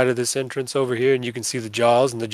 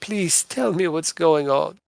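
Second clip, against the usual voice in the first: put-on small, childlike, girlish little girl voice; 4 semitones higher than usual. Recounting a game, the speaker voices what a girl in a coffin says: little girl voice. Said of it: "the little girl's voice says".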